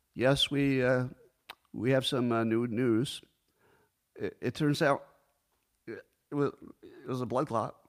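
faltering, halting, uneasy, uncomfortable official-sounding delivery. Imitating an intelligence chief confirming a blood clot: uncomfortable hesitant impression. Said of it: "my impression of the Ukrainian intelligence chief".

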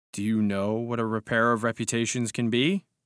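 plain

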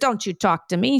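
put-on Russian accent. Retelling a woman's reply to a young doorman who told her to leave; Russian accent. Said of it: "That's a Russian accent".

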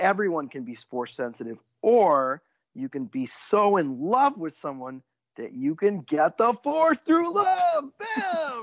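thick, heavily sarcastic, high and swooping delivery. Discussing a film's use of the force with a co-host: heavily sarcastic. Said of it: "I'm being heavily sarcastic".

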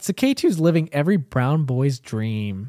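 normal talking voice

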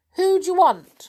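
very high, furry little rabbit voice. A rabbit pops out of its hole and speaks to the children, furry rabbit voice. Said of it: "said the rabbit in a furry sort of voice".

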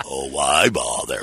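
very low, deep storybook donkey voice. Reading a children's book aloud, doing an Eeyore voice.

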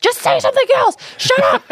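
mock fed-up, very high-pitched, shrill yelling. Speaker recalls people getting mad at their stunt; retelling people yelling. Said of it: "People were like yelling at me".

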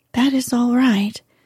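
ordinary delivery

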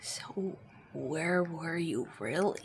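whispering in character voice. Crouching down to question a character in his ear: whispering in character. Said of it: "I'm gonna whisper in his ear".

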